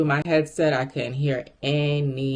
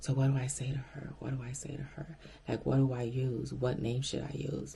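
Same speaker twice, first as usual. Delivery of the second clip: hushed, whispered, worried fretting; 12 dB quieter than usual. Retelling words overheard while placed on hold: imitating someone whispering. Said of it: "the way they were whispering".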